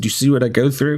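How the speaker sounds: mock mumbling, muttered. Recounting what he told J T earlier, retelling his mumbling. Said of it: "I'm mumbling to J T".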